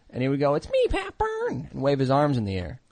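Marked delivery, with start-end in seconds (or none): 0.5-1.6 mocking voice, pitched way up high. Retelling a former roommate's impression of him. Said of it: "I had a former roommate whose impression of me that was".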